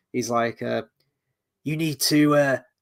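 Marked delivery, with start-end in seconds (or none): 1.6-2.5 failed Cockney accent drifting into Kiwi accent. Voicing the Iron Dragons leader whispering in his ear: failed Cockney accent, sounds Kiwi. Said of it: "no, that's the Kiwi. I can't do a fucking British accent".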